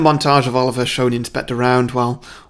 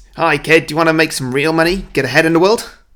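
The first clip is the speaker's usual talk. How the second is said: put-on Australian accent suddenly slipping in; 3 semitones higher, 3 dB louder than usual. Acting out Dodger tempting a kid with money: Australian accent. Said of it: "He's suddenly gone Australian".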